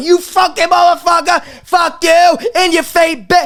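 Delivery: acted, high-pitched jeering and taunting. A Mets fan acting out how they'd be expected to taunt a Yankee-fan friend; mock-taunting a rival fan. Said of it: "you would think I would act to a Yankee fan".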